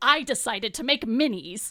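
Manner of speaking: self-satisfied, proud dad voice. Retelling how the husband announced his baking: imitating a proud papa. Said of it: "like a proud papa".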